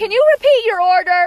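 put-on yelling. Retelling how a woman at a drive-through intercom spoke: imitating someone yelling. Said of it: "She was just yelling at me".

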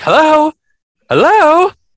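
very high, loud, screechy mocking squeal.

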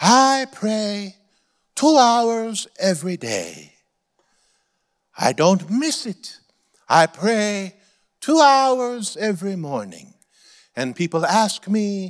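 put-on Korean accent. Telling what the head of a huge South Korean church said, Dr. Cho impression, heavy Korean accent. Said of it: "he spoke with a heavy Korean accent".

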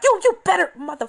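mock yelling. Recalling watching an episode sitting up on the bed, reenacting yelling at the tv. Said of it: "you yelling to the TV like".

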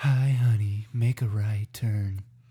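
low, drawn-out sexy voice

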